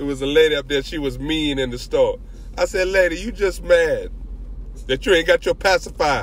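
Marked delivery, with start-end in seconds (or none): 2.9-6.2 sarcastic, jabbing put-down tone. The speaker retells what they said to a mean lady in a store; retelling a sarcastic jab. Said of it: "One day I felt like being sarcastic".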